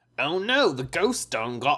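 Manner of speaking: attempted Southern accent drifting into a British accent. Narrator reading a ghost-hunting story aloud, failed southern accent, sounds british. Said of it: "they ended up being British".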